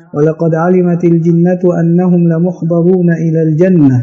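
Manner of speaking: normal talking voice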